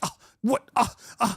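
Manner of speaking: indignant, angry, high-pitched outburst. Retelling the caller's reaction on the phone: imitating an angry caller. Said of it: "and so angry".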